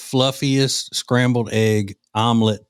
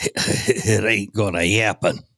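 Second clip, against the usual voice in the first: put-on broad, slow, thick Midwest drawl, breathing heavy. Imitating a caller's recorded message: imitating thick Midwest accent, heavy breathing. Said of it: "the heavy breathing and the, and the thick Midwest accent".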